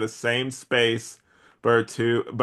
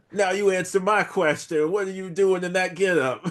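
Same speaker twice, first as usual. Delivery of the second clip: put-on, pitched-up New York accent; 8 semitones higher than usual. Discussing an old comic, the speaker reads a character's line: new york accent. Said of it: "with like a New York accent".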